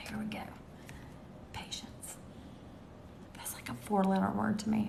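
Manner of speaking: hushed, breathy, barely voiced whisper. Chatting with Carol, the speaker drops into whispering. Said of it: "I don't know why I'm whispering".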